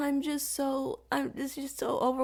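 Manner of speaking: fake crying voice. Mocking people who make excuses instead of videos, with mock crying. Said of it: "Stop with the, the, the crying".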